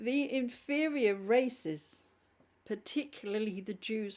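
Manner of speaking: helplessly cracking up mid-sentence, slow, crying with laughter. Reading aloud from a book they find ridiculous, crying with laughter. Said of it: "I'm crying with laughter".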